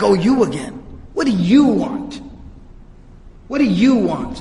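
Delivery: contemptuous, disdainful, dismissive tone full of disapproval. Retelling a narration of a man answering as he walks to the door, mock-disdainful. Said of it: "you could hear the disdain in his voice".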